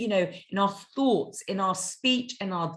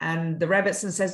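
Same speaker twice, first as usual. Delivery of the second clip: plain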